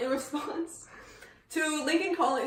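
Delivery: pushed through a dry throat, clearing it. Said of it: "my throat's a little dry".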